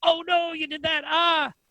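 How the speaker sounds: very high, drawn-out, startled surprised yell. Retelling how reacting to students' moves sounds: imitating own surprised yell. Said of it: "you yelled at me".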